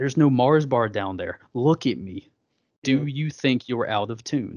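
play-acted angry, explosive, berating, popping-off rant. Retelling Fletcher popping off at a nervous player: imitating Fletcher popping off angrily. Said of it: "he just starts popping off".

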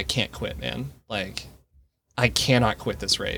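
words pushed out through tears, tearful and pleading. Retelling what was said aloud to the pacer: retelling own words said while crying. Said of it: "And I start crying again and out loud I say".

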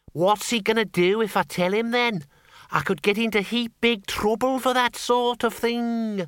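piercing, shrill, peevish and petulant. One Man Bucket answers Windle's question, shrill and petulant. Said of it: "sounded shrill and petulant".

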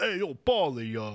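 put-on Italian-American accent. Quoting how the Rocky character talks, Sylvester Stallone impression. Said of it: "sounds like you're doing, like, a Sopranos character".

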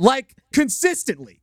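exaggerated, high, wide excited yelling.

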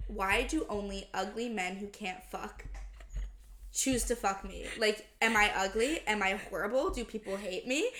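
plain

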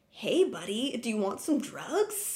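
slow, drawn-out cartoon mascot voice. Retelling a scene where a character offers drugs: Chester Cheetah voice. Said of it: "He sounds like Chester Cheeto".

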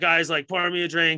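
put-on blackout-drunk, yelling, calling out loudly. Retelling a blackout-drunk friend demanding a drink: imitating Kieran yelling. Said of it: "yelling at us while he's taking a piss".

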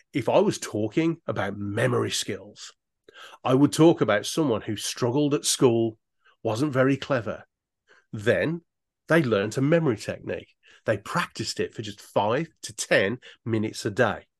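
varied, expressive storytelling tone. A speaker showing how to tell a story when speaking, expressive storytelling tone. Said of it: "you can see the way I'm changing my tone, the expression of my voice".

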